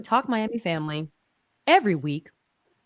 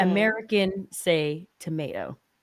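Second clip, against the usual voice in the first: ordinary talk, nothing marked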